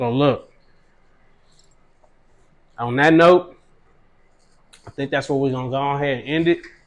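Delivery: speaking while chewing, mouth full of food. Host talking to Cuzzo while eating, talking with mouth full. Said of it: "trying to eat with my mouth full of food".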